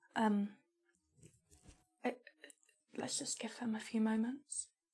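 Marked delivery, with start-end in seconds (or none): 2.9-4.6 hushed whisper, barely voiced. Speaking in character to Talia outside a room: whispering. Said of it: "and then I whisper to Talia".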